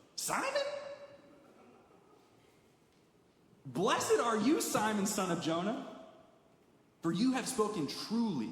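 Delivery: acted amazed surprise, swooping exclamation. Retelling the reply given to simon, acting out a surprised voice. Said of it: "you can almost hear the surprise in his voice".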